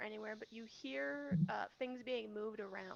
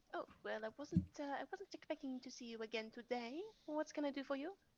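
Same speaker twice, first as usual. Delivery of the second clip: put-on shopkeeper accent; 3 semitones higher than usual. Voicing a shopkeeper greeting a returning customer, in her accent. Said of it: "Let's see if I can remember her accent".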